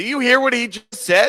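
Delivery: shouting, pitched very high. Asking another speaker about what someone just said: yelling. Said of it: "Why are you yelling?".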